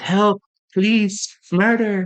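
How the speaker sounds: very high, flat, unbothered deadpan sarcasm. Retelling Wonka's reaction when a boy falls in the river, mock-nonchalant Wonka quote. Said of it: "quiet and nonchalant and just like sarcastic".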